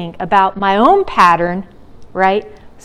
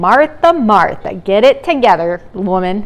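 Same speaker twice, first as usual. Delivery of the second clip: slow put-on scolding, reprimanding tone. Imitating a parent saying a child's full name in trouble: mock-scolding parent tone. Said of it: "when your parent says your whole name when you're in trouble".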